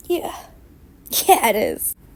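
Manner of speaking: teary, breathy whisper through tears. Watching giraffes on screen beside a friend, answering her in a teary, crying voice. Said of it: "Are you crying?".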